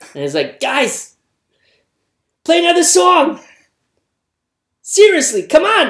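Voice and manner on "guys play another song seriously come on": shrill, loud, high screaming. Imagining a comedian in a Star Wars cantina heckling the band: Bill Burr impression. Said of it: "Imagine Bill Burr, actual Bill Burr being in Star Wars".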